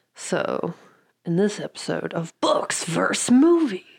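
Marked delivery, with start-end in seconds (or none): 1.3-3.8 movie trailer announcer narration voice. Opening the podcast episode, movie trailer announcer voice. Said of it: "With a preview man voice".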